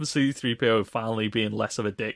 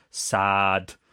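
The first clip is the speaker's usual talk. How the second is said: put-on robot voice; 2 semitones lower than usual. Mocking a film robot that names feelings: imitating the robot. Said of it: "it just cuts to the robot going".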